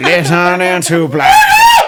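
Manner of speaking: big, loud screamed call with swooping pitch. Opening the show for audio listeners, the speaker screams the intro. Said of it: "Why are you screaming? ... why do you scream it like that?".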